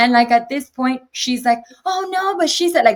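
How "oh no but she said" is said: put-on shrill, very high, frantic, out-of-control scream. Retelling a relative insisting during a fight: imitating someone screaming. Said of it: "she's screaming, getting crazy".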